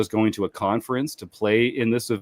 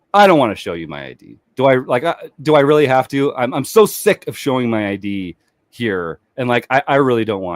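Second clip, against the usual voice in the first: usual speaking voice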